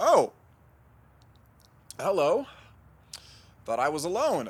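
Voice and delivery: very loud, high, tearful crying wail. Found alone by someone asking if he's okay, answering them, crying. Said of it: "Why are you crying?".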